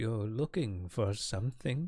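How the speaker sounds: small, quaint woman's voice. Storyteller voicing a small woman tucked between carts, quaint small voice. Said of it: "you hear a quaint, sm- small voice".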